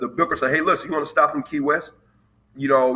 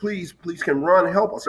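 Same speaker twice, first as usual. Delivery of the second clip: high-pitched mock crying with tearful pleading tone; 5 semitones higher than usual. Retelling a student calling the office, imitating a girl crying. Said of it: "the girl is crying on the phone".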